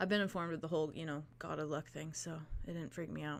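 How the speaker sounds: very quiet, gentle, hushed voice. Voicing a character reading a book, speaking to a player who wakes: very soft voice. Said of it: "he just very softly says".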